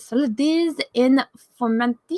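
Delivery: terrible fake French accent. Reading gaming news, pronouncing a french site name, terrible french accent. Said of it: "That's my terrible French accent".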